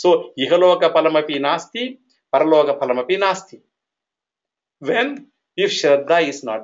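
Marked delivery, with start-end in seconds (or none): none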